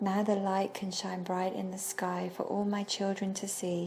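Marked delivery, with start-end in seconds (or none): none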